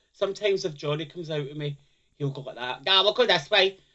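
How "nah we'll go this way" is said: very loud, raised, pitched-up voice. Retelling what a friend says on walks: Johnny impression. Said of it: "It's a very good impression of Johnny".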